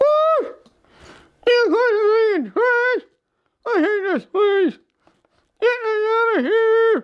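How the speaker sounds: slow, struggling, barely intelligible, hard-to-follow speech. In a puppet show, the reanimated creature answers its makers; hard to understand. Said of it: "Um, in the process of reanimating you, when um, we, we, we may have affected your brain just a little bit. / You can't hardly talk. ... Well, you might be a little hard to understand, / Uh, if you thi".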